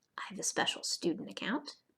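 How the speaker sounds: soft, hushed whisper, barely audible. Narrator of a student sign-up tutorial, whispering.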